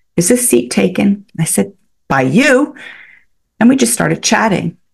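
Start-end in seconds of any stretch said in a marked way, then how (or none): 0.2-1.3 put-on Irish accent with a polite tone. Retelling how a woman asked whether a seat was taken, imitating an Irish accent. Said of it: "She had the most beautiful Irish accent".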